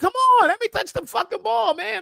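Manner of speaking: play-acted, very high, begging voice. Watching a match, voicing a young player who wants the ball, imitating a player begging. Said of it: "He's begging".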